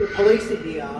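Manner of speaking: ordinary delivery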